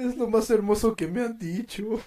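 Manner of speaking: mock crying through the words, high and fake-sobbing. Reacting to what the other speaker just said, mock crying. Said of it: "¿Por qué lloras?".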